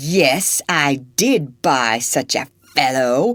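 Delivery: rage-filled, angry growling voice. Narrating a novel, voicing Legree answering a man who came to buy back a slave, growling in rage. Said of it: "he growled in rage".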